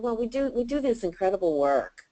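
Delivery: soft, low-key understatement with flat pitch. Retelling how a client pitched at a networking group: imitating Sharon's low-key delivery. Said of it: "she would say it with that kind of enthusiasm".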